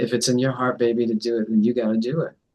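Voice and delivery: ordinary delivery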